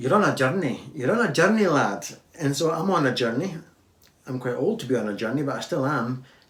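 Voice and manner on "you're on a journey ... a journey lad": fake Scottish accent, louder. Joking after noticing a line sounded Scottish: put-on Scottish accent. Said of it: "That sounded really Scottish, eh?".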